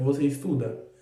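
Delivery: monotone, flat, level, no rise or fall. Showing how intonation tells questions from statements, flat, level intonation. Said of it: "sem nenhuma entonação".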